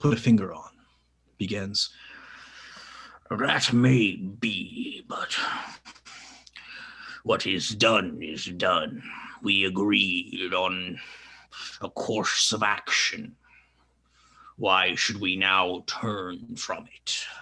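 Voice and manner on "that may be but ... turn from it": put-on lofty, superior, haughty old voice, slow. Narrating a council's deliberations heard through an orb, the first councillor speaks: haughty elder's voice. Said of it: "a haughty voice that seems reminiscent of an elder".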